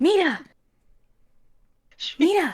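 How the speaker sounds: put-on whisper shout. Retelling calling out to someone below, retelling a whisper-shout. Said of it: "I kind of like whisper shout".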